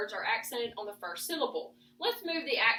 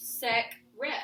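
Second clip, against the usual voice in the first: stress on first syllable sec in secret. Showing a learner the word with stress on SEC. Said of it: "read both syllables with the accent on the first syllable".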